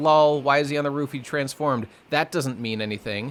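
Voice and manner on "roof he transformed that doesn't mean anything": ordinary talk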